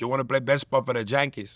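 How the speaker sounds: quick, stock, put-on Spanish accent.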